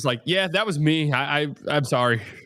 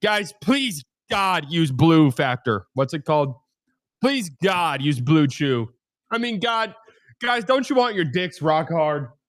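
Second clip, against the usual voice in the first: exaggerated mock begging, pleading. Joking about how he would do a sponsor ad read if allowed: mock begging. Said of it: "I want all my ad reads to sound like begging".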